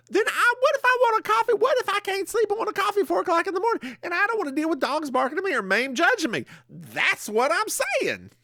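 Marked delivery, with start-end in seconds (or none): 0.1-6.4 high-pitched hollering, ranting delivery. Complaining to another speaker about wanting coffee at 4 a.m.: yelling. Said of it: "why are you yelling at me?".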